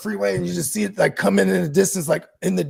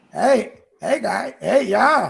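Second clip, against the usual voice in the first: put-on Chicago accent, slow and drawn out; 3 semitones higher than usual. Imitating Kittle talking like a Chicago dude: Kittle Chicago accent impression. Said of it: "he does talk like a Chicago dude".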